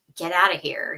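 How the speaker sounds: put-on gruff, stern voice. Retelling a doctor's words to investigators: imitating a gruff doctor. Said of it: "very gruffly saying".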